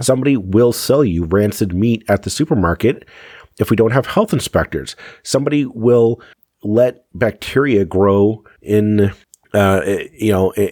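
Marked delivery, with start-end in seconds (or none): none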